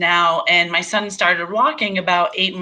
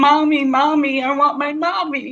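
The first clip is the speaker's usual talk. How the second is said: mock tearful, desperate, sobbing small-child wailing voice; 8 semitones higher than usual. Mother retelling how her son reacted to seeing her hooked to tubes, imitating a crying child. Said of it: "he started screaming and crying".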